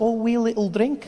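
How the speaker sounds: put-on Scottish accent. Imitating how Scottish people suggest a drink, in a put-on Scottish accent. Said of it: "Scottish people do that so well. They're like".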